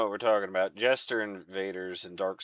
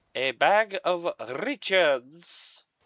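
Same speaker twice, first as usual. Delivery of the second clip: very slow, raised, light French accent with rolled R; 8 semitones higher, 5 dB louder than usual. Repeating a phrase the way some people say it: slight french accent. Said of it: "as I've heard some people say with a slight French accent".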